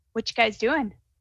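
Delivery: hushed, almost half-whispered stage whisper. Voicing an armed woman as she speaks to him, almost half-whispering. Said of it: "she actually almost kind of whispers to him and says".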